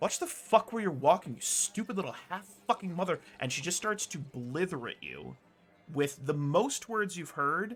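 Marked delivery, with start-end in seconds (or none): 0.0-3.2 fast, huffing, huffy, angry tone. Narrating a woman unloading on the listener, huffy angry woman. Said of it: "with a huff, she says".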